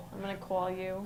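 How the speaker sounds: put-on New York accent. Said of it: "New York's actually kind of similar to Bos-".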